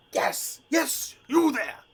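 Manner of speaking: very high, tiny little dragon voice. Voicing a small dragon knight calling out to the party: voicing a small dragon knight. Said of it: "And this creature says".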